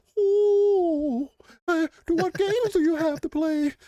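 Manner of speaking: very high, slow put-on alien voice. Speaker imagining an alien asking what games there are, alien voice. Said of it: "that's my alien voice".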